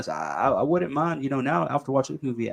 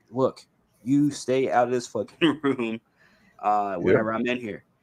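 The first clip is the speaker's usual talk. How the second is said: usual speaking voice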